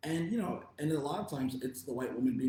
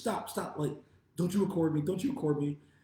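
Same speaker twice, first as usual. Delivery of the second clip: put-on scared, panicking woman's voice, higher; 5 semitones higher, 4 dB louder than usual. Retelling a woman backing away from a man recording her: imitating a panicking woman. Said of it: "she's just panicking".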